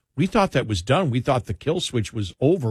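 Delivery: ordinary talk, nothing marked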